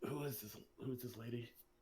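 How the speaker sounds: very quiet, barely audible half-whisper. Voicing a character at a restaurant meeting a player's mom: half-whispering.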